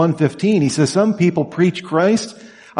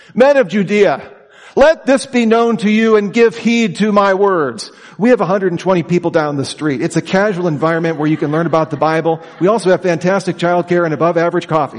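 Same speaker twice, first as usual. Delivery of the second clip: ordinary delivery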